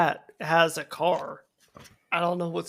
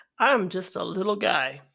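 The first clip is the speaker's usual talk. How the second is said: ordinary delivery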